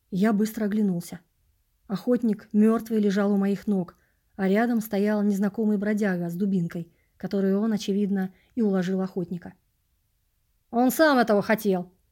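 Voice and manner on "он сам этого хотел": reassuring, soothing, calming shout. A stranger with a club calls out to the others, a soothing shout. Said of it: "успокоительно крикнул он".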